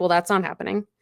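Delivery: ordinary talk, nothing marked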